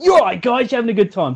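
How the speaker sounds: put-on energetic bingo call. Retelling own bingo calling at the start: imitating energetic bingo calling. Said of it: "you could notice the energy in your voice".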